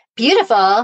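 loud, scornful, sarcastic, mocking tone, acted out. Retelling how the teacher mocked a student's compliment: imitating a teacher mocking. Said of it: "he starts making fun of her".

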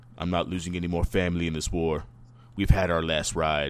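low grizzled character voice. Retelling a story scene, Dom speaks to the family at the table: low, grizzled Dom voice. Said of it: "Dom says in a low, grizzled voice".

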